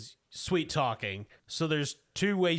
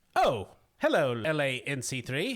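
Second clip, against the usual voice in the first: stuttering mechanical droid voice. Voicing a protocol droid turning to greet a visitor: stuttering protocol droid voice. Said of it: "He turns around in that stuttering, weird way".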